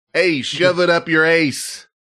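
fake Chicago guy voice. Retelling what a police officer in the car said; imitating a Chicago accent. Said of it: "you can hear he's like a Chicago guy".

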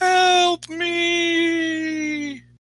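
very high wailing moan, "me" drawn out. A narrator voices a distant cry from the woods: moaning wail. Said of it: "a moaning wail off in the woods".

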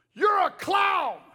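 mock very high, shrill, top-of-the-lungs shriek. Retelling a man in the church who stood up and screamed: imitating a man screaming. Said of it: "screams at me at the top of his lungs".

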